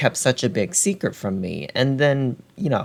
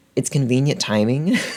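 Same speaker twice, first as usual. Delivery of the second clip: usual speaking voice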